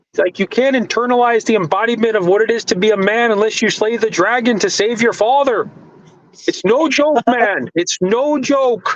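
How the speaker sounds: put-on very high cartoon frog puppet voice. The speaker imitates a man said to have Kermit the Frog energy, Kermit the Frog impression. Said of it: "It's a freaking good Kermit the Frog impression".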